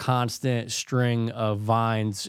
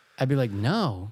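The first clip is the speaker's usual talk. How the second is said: ordinary talk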